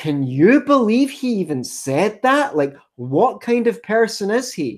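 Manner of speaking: put-on incredulous, scandalized disbelief. Act out someone's tone after quoting another man, in a mock can-you-believe-he-said-that tone. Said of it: "in a tone of voice that's so as to say".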